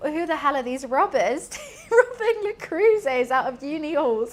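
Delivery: put-on half-laughing, incredulous, amused outburst. Retelling telling a friend the robbery story: imitating own past laughing. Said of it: "then kinda laughing about it".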